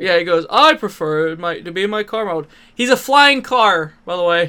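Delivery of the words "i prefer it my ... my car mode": put-on cartoon robot voice. Showing how a figure's animated character talked: Trax voice. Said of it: "he talked like this".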